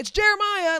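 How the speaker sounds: very loud, high, booming call. Retelling how a character knocked on the door: retelling a loud announcement. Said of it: "very loudly".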